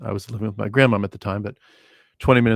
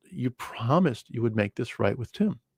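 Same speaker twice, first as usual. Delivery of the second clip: mock livid anger, quieter; 2 semitones higher, 5 dB quieter than usual. Speaker retells how their mother reacted, imitating her livid anger. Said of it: "was over the top livid".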